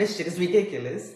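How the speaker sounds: speaking through laughter. Talking to viewers, the speaker can't stop laughing while talking. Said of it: "I'm laughing because I just am".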